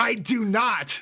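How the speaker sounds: firm, emphatic tone. Offered some by Kotomine, the narrator refuses him: firm denial. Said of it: "I gave him my firmest denial".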